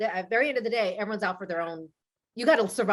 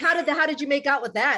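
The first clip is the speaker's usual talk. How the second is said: mock delivery dripping with heavy sarcasm; 4 semitones higher than usual. Retelling a girl's line from the series, imitating her very sarcastic tone. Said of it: "very sarcastically".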